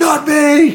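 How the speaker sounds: high, loud, defiant yell.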